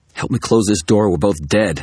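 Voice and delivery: snarling, high pitch. Narrator, forcing a door shut against a loup-garou, urges the guard to help: snarling. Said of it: "I snarled".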